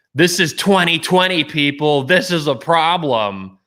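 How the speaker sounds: high-pitched screaming, ranting woman's voice. Speaker retells a woman screaming in her car to her followers, imitating her screaming. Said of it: "and she's screaming. She's like".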